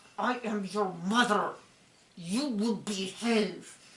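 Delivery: hushed hiss through clenched, gritted teeth. Speaker recalls how their mom would talk to them, imitating mom's gritted-teeth hiss. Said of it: "Gritted teeth, hissing voice".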